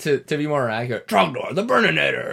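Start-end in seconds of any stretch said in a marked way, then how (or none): 1.1-2.3 put-on cartoon voice, higher and louder. Recapping a countdown list, naming number ten in the Strong Bad voice. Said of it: "That's the strong bad voice".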